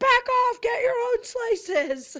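mock scream through full mouth, very high, drawn out. Retelling a funny scene from a show: imitating a scream with mouth full. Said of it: "screaming with his mouth full".

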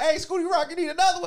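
acted-out brash, loud, high shout. Retelling how the bartender called to a regular: imitating a loud bartender. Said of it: "she loud as fuck".

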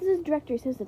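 ordinary delivery

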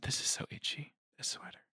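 very soft whisper. Complaining that a sweater is itchy: whispering. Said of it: "I whispered that".

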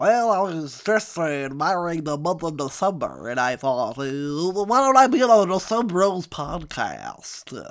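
loud, nerdy character voice. Playing a new nerdy character being welcomed on the show: nerdy Rick Moranis character voice. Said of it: "This is my new character".

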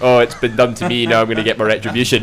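ordinary talk

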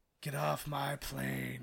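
put-on gruff movie cowboy voice. Showing off an impression after praise, doing a Clint Eastwood impression. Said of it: "I know that's not him".

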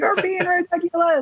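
very high-pitched shouted yelling. Recounting an argument, the speaker repeats what a man yelled at them: retelling a yell. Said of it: "Eric was like yelling at me".

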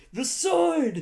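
mock movie battle cry, high, loud, excited.

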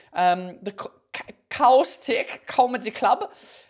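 very slow, fake put-on German accent. Comedian announcing his upcoming comedy club show to listeners, put-on german accent. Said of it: "I don't know why I'm doing a German accent".

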